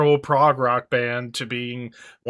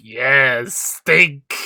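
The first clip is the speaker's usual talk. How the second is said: put-on, evil cartoon villain voice; 3 dB louder than usual. Imagining how an absent person would sit there: evil cartoon villain voice. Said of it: "Like an evil villain in a cheesy cartoon".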